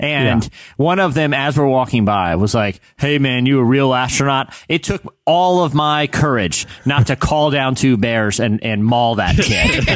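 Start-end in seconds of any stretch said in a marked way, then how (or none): 3.0-4.5 put-on mocking, taunting child voice. Retelling a kid's question as they walked past, imitating a mocking kid. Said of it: "It was mocking".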